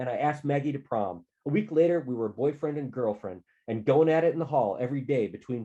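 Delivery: plain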